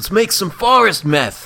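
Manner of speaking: very loud, high-pitched, slow, drawn-out belting voice. Joining a bit about a movie actor sounding like Aaron Paul: Aaron Paul voice. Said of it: "he sounded like Aaron Paul from Breaking Bad".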